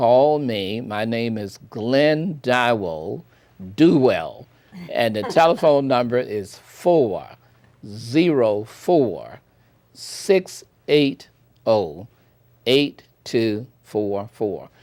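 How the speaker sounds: very slow, deliberate, each word laid out separately. Speaker gives his name and phone number to interested listeners, very slowly. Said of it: "let me say this very slowly".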